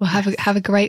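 hushed whispered voice. Wishing someone a great date night while another person is on headphones, whispering. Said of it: "I don't know why I'm whispering".

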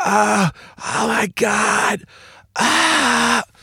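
acted, very high, very slow, rasping, pained scream. Retelling hearing his sister from the other side of the house: imitating sister screaming in pain. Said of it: "I can hear her screaming like someone stabbed her".

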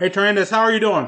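words pushed through a mouthful, mouth full. Eating a chicken wing on camera and greeting trandis, talking with mouth full. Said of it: "I know it's not nice to talk with your mouth full".

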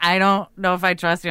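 usual speaking voice

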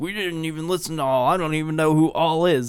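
put-on aggressive, defensive outburst. Speaker acts out a band denying they copied another band, mocking aggressive defensiveness. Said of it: "aggressively defensive".

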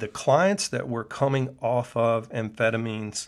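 ordinary talk

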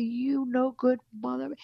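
mild, light mock screaming outburst. Retelling how a man screamed curses at them: imitating someone screaming. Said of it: "He started screaming at me".

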